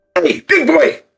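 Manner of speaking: very high, loud, shouted call-out. Calling across to a big creature to get his attention: calling out loudly. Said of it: "put my hands up on either side of my mouth".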